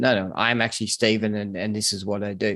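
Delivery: plain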